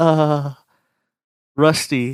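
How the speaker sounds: audible sigh. Retelling how she lay on her stomach and said the name: imitating someone sighing.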